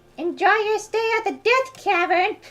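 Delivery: odd, very high, weird cutesy character voice. Recalling a remembered character line, said in a weird cutesy character voice. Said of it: "it's supposed to have like this weird cutesy voice".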